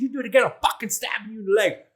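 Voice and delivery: mock yelling in a threatening tone. Retelling what a workmate yelled at a red light: imitating someone yelling. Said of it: "he's yelling at me".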